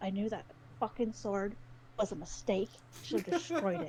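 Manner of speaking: grumbling, muttered aside. A character listening, shaking her head, mutters to herself: muttering to herself. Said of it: "she kind of mutters to herself".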